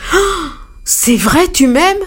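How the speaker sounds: bursting, very high-pitched exclamation. The elephant answers the dove that has landed on his trunk, exclaiming. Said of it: "L'éléphant s'exclama".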